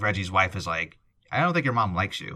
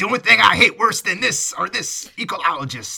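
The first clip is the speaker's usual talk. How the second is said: put-on old prospector voice, higher and louder; 10 semitones higher, 7 dB louder than usual. Retelling lines from a movie, imitating an old prospector. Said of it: "The old prospector".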